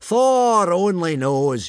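loud high shout. Narrator reading Gobber's line to the trainees aboard a pitching boat, yelling. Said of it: "yelled Gobber".

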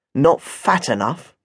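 muttered under breath. Narrator mutters an aside while another woman is talking, under the breath. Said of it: "I asked under my breath".

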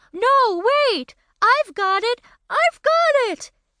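high, excited shouting, pitched way up. Narrator reading a story, voicing a character jumping at the front of the room, shouting excitedly. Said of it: "he shouted real excited".

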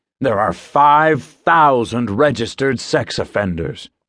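grave, stern, severe no-nonsense voice. Narrator voicing a man who is hard to interrupt, speaking sternly. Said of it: "he says sternly".

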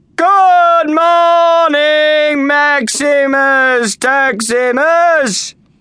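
very high, loud, lazy, slow drawl. Gladiator students greet the master of their school, in a slow drawl. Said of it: "replied in a slow drawl".

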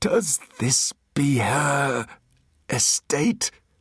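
high, slow, scared, grating creature voice like crushed glass. Narrating a story, the creature asks Artemis a question, in a scared, grating creature voice. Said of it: "but there was no mistaking this creature for human. It sniffed the air through slitted nostrils, opened a snake's mouth, ... it said in a voice of crushed glass and grating steel".

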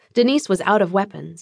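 ordinary delivery, nothing marked

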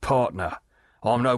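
plain reading voice

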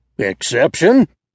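crying out sharply. Bull Pepper rises to his feet, interrupting Bates; crying out sharply. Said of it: "cried Bull Pepper sharply".

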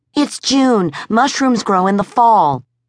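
barely coherent, wildly excited, bursting, taut throat. Narrator reads a woman answering her suspicious questioner: wildly excited. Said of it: "Her heart pounding, her throat taut, her hands shaking with wild excitement, [name] O'Mara could scarcely trust her words to be coherent".

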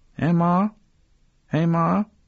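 very high, drawn-out, goat-like bleating call. Narrator voicing a boy calling to his grandmother in the dark, bleating like an infant goat. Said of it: "He sounded like an infant goat".

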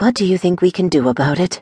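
whispering. Mogir asks her question without lifting her head, whispered. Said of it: "Mogir whispered without lifting her head".

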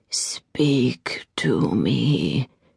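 deep, soft, low rasp, "me" drawn out. The narrator voices the serpent asking to be spoken to, deep rasping voice. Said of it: "said the serpent in a deep, rasping voice".

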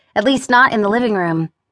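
ordinary delivery

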